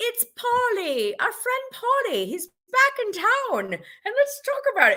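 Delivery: jokey, very high-pitched, put-on Irish accent. Talking about a show's group trip, the speaker jokes: Irish accent. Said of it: "that's my Irish accent".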